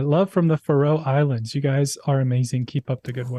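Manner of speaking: ordinary talk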